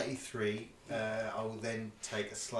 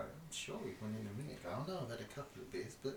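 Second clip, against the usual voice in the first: soft, fast muttering to himself. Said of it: "they kind of mutter into themselves".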